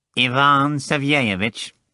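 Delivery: nasty, unpleasant, repugnant nasal voice. A caller on the phone asks for someone, repugnant nasal voice. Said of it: "in a most repugnant nasal voice".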